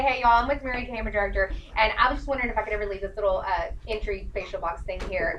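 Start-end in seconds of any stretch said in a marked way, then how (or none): none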